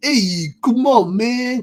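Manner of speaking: put-on loud, high, over-the-top thick New York accent. Reviewer describing the turtles' accents, mimicking Leo's over-the-top New York accent. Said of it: "over the top, like, ... kind of accent".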